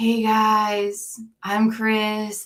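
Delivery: flat monotone. Showing how he introduced himself in his channel's first videos, imitate Chris's very monotone voice. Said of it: "Like he's just very monotone".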